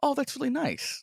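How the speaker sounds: sincere, warm, caring, very high-pitched tone. Showing how intonation changes the meaning of that's nice: positive, caring tone. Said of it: "Positive, caring".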